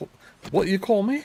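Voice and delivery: very high-pitched, bad British accent. Retelling bumping into Florence Pugh and her reply: horrible British accent as Florence Pugh. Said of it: "That's a horrible British accent".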